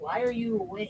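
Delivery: very soft, hushed, motherly voice. Telling a wakeful baby off, imitating the baby's mother. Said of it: "as your mother would say".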